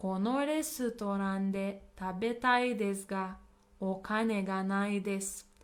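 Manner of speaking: ordinary talk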